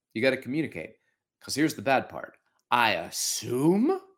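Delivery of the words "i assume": brief cartoon-dog voice sound. Speaker explaining communication slips, mid-sentence, sounding like Scooby-Doo. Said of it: "Why did I sound like Scooby-Doo?".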